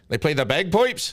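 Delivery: put-on Canadian accent. Speaker shows off the canadian accent they boast about, canadian accent demo. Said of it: "I do do a perfect Canadian accent".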